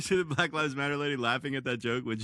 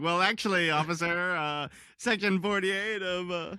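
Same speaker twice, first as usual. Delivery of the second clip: mock argumentative delivery, higher; 6 semitones higher than usual. Pretending to argue with an officer after being pulled over: pretending to be a sovereign citizen. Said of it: "I wanna hold up the Constitution and be like".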